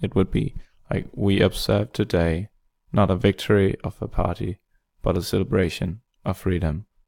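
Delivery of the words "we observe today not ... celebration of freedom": slow, deliberate phrasing with pauses mid-sentence. Reading the inaugural speech's opening line: slow with mid-sentence pauses like John F. Kennedy. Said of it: "like him".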